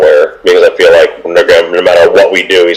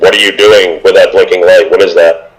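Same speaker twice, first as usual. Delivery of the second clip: plain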